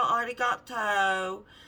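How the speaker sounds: put-on California Valley girl accent. Retelling what another girl said handing over her passport: imitating a Valley girl voice. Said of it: "She was all California Valley girl".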